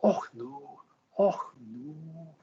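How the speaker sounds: very slow, failed put-on Scottish accent. Reacting to a viewer comment, speaker attempts a failed Scottish accent. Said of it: "It's more Edinburgh".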